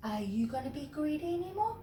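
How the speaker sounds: small, soft, tiny little voice. Reading a story aloud, voicing the giant's question: little voice. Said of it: "said the giant in a little voice".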